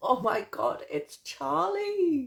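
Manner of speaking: delighted, excited squeal, high and slow.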